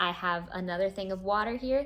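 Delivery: ordinary talk, nothing marked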